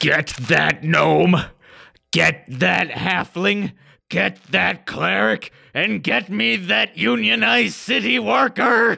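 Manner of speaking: rasping voice, pitch climbing with each line. Voicing the half-orc guard captain in a story scene, half-orc guard captain bellowing. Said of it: "He yells".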